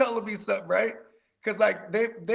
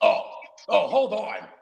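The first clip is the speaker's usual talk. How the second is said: mock, grudging, annoyed tone, slow. Retelling a butcher's reply to a request to cut ribs: imitating an upset butcher. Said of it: "Getting all upset with you".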